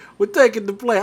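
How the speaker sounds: put-on Middle Eastern-accented speech. Acting out a hijacker on a plane: imitating a hijacker in a Middle Eastern accent. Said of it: "I was about to do a Middle Eastern accent".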